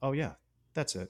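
put-on straight-faced tone. Retelling a movie father's reply to being called an idiot: imitating a deadpan reply.

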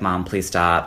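mock-crying, pleading tearful voice. Recounting a scene where a boy hides in the attic, imitating a crying plea. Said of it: "he's crying, being like".

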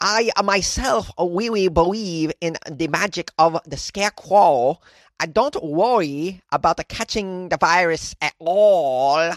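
put-on slow, poorly done Cambodian accent. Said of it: "Let's try it".

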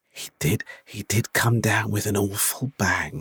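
very slow, drawn-out half-whisper. Retelling what a woman half-whispered to the speaker, retelling a half-whisper. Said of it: "There was a woman that sort of whispered to me".

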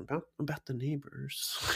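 quiet, hushed voice. Retelling how a man who'd been yelling stops, looks around, then speaks, quiet. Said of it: "he quietly goes".

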